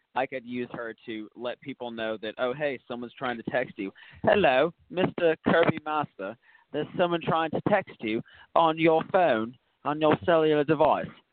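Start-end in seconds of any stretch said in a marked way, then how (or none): 4.2-11.0 put-on phone assistant voice with an English accent. Imagining a phone voice telling Kirby about a text, in an English-accent Google voice. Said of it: "The English accent".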